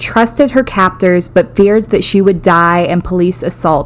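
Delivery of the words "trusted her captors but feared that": plain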